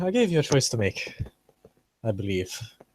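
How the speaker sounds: put-on Irish accent. Speaker back in character, addressing the other person, Irish accent in character. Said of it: "back in character".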